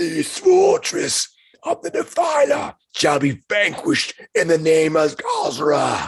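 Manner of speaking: raging warrior bellow, very high and swooping. Storyteller voices a warrior who appears before the listeners, bellowing. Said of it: "It bellows out".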